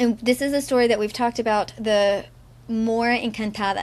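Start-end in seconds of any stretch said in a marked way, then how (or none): none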